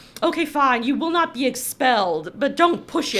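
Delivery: ordinary delivery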